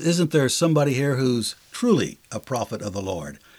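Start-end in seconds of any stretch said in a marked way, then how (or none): none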